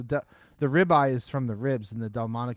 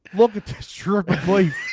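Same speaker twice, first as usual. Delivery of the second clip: failed fake New York accent sounding Australian; 9 semitones higher, 7 dB louder than usual. Speaker trying a new york accent he admits he can't do, bad new york accent attempt. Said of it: "I don't even know how to do a New York accent".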